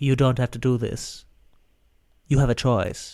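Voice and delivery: put-on ghostly female voice. Recapping a scene where a ghost touched his hand, doing a Marie the ghost impression. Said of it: "That's also a spot-on impression of her".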